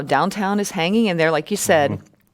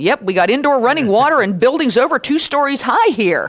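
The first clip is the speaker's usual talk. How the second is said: mock snarky, pitched-up tone; 7 semitones higher, 4 dB louder than usual. Retelling own reply to a confused news crew: retelling own snarky remark. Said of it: "I was being a little snarky".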